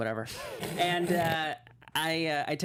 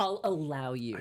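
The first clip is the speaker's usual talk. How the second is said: mock-curt, dismissive, brushing-off tone. Retelling how she let them in after the late movie, imitating a curt brush-off. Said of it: "it was a very curb fuck you thing".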